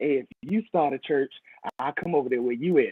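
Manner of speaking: sly, sneaky, hushed stage whisper. Retelling what a lady said after church: imitating a sneaky, quiet voice. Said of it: "she said it so sneaky and quiet".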